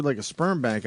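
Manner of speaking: ordinary delivery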